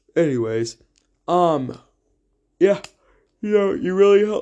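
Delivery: speaking through a yawn. Talking to a listener, yawning while talking. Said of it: "I'm sorry, I'm yawning".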